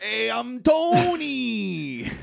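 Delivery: very high, loud put-on Bronx accent, a word stretched. Describing a man from the Bronx, doing his voice in a Bronx accent. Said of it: "the Bronx".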